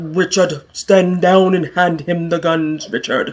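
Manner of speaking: forced, pushed-down deep baritone voice. Retelling a standoff with drawn guns: forced baritone Ezekiel voice. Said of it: "Ezekiel put some tone and some bass and baritone in his voice".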